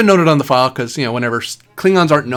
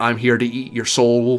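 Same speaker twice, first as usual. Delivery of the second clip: put-on intimidating robot voice. Explaining how he can switch his voice, showing it off: Borg robotic voice. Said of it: "sound more Borg robotic, ... sort of robot intimidating".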